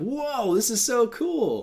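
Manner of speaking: acted awe, very high-pitched, slow and drawn out. Retelling a plot scene, imitating impressed tourists: retelling amazed tourists. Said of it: "they're super, like, just impressed".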